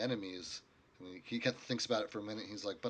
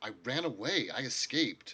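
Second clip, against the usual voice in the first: flustered, agitated tone; 3 dB louder than usual. Voicing a character admitting he ran away: flustered. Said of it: "getting a little flustered".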